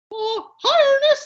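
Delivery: squeaky cartoon mouse voice. Speaker showing the others an impression, Mickey Mouse voice. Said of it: "that's my Mickey Mouse".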